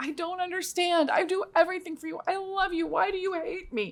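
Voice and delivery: high, broken-down, crying, sobbing, acted out. Retelling a kitchen argument with a nine-year-old daughter: retelling own crying plea. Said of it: "I just broke down and I started crying".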